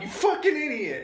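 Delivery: very high shrill yell. Retelling how he yelled at himself after a missed call: imitating yelling at himself. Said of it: "yelling at myself".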